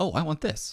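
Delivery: high, excited voice.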